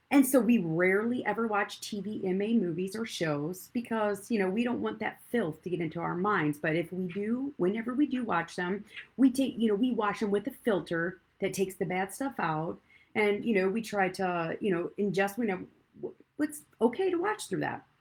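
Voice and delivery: ordinary talk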